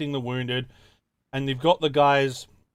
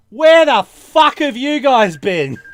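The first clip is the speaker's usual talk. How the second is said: put-on thickest broad Australian accent, very loud and high; 11 semitones higher, 12 dB louder than usual. Retelling a wounded guy calling out from a tree, very strong australian accent. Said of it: "in the most Australian accent ever".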